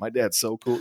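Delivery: ordinary delivery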